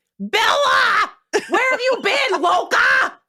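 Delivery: very high, slow, drawn-out scream. Imitating a dog as Jacob from Twilight: screaming like Jacob from Twilight. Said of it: "he's out there screaming like freaking Jacob".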